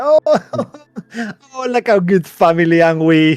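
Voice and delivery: very high, laughing, gushing delivery.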